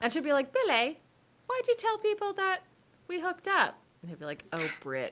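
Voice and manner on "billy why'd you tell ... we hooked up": fake British accent, pitched very high. Pitching a movie scene, acting out a woman on tour confronting a man, put-on British accent. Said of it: "British accent".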